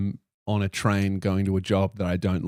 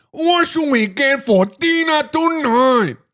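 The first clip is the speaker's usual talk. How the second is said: very high, slow, bad put-on Chinese accent; 7 dB louder than usual. Imagining a version of the ad made in China, the speaker voices the guy: attempted Chinese accent. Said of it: "I've lost my Chinese accent".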